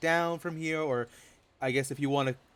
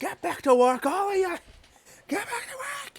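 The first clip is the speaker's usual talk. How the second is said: shrill, high-pitched screaming with rising pitch; 4 dB louder than usual. A game narrator voicing a whip-holding overseer ordering workers back: screaming. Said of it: "Just screaming like".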